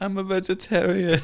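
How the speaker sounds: high, crying, teary, sobbing voice. Retelling a movie scene where a character is crying: imitating someone crying. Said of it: "He's, like, crying".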